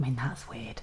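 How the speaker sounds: embarrassed, soft unvoiced whisper.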